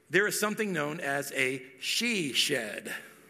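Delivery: very slow, every word clearly enunciated. A speaker introduces a newly learned term to the audience, very slow and clear. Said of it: "I have to say this really slowly and clearly".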